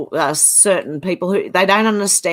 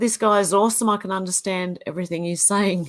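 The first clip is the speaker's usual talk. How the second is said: ordinary talk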